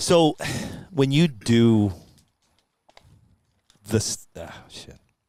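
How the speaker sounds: choked up, voice breaking with emotion. Paying respects to a family on a mic, choked up. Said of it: "this is where I get all choked up".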